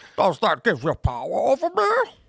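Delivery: terrible put-on Romanian accent, high and swooping. Showing how a film character talks, imitating a film character's voice. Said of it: "It talks like this".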